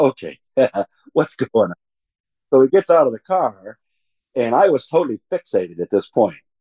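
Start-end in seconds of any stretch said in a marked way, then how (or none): 0.0-1.7 put-on giggling while talking. Retelling a friend's reply while looking at the sky: imitating someone giggling while talking. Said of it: "he's kinda giggling at me".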